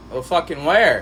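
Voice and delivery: normal talking voice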